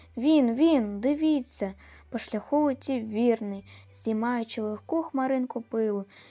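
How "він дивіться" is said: sudden cry, higher and louder. A son looking out the back window of the car suddenly cries out. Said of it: "раптом скрикнув".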